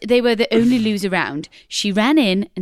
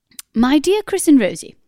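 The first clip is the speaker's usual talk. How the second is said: put-on upper-class posh accent, pitched up; 6 semitones higher, 4 dB louder than usual. Reading out a message sent by a posh person: put-on posh accent. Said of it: "I thought I might do it in a posh accent".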